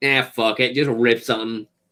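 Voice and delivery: ordinary talk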